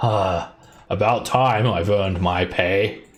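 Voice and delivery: goblin creature voice, speaking clean and fluent. Voicing a smiling hobgoblin arriving to fight: hobgoblin voice speaking good Common. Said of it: "he speaks in pretty good common".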